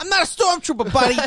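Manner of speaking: put-on hard yelling in a Boston accent. Joking about a show where Bill Burr keeps yelling: Bill Burr impression, yelling in Boston accent. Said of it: "Still yelling in his Boston accent in space".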